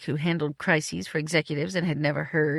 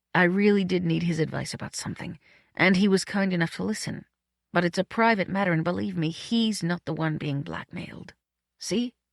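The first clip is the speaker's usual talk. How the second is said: ordinary delivery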